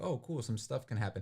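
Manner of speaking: plain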